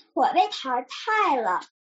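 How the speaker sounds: plain reading voice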